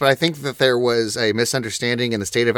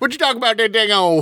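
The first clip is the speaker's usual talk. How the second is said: mock Scottish accent, pitched much higher; 11 semitones higher than usual. After talk of hard-to-understand accents, joking in a mock scottish accent. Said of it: "That's just my traditional Scottish accent".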